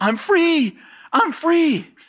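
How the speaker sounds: very high, slow, drawn-out long cries. Speaker recounts a woman's outburst after he prayed for her, imitating a woman yelling. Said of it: "she's yelling".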